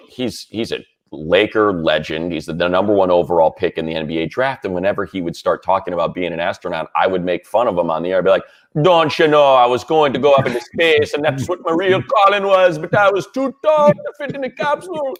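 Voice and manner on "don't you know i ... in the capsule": horrible put-on Bahamian accent, very high in pitch. Mocking a former co-host on air: bad Bahamian accent as Michael. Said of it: "a bit of Irish going on in your Bahamian".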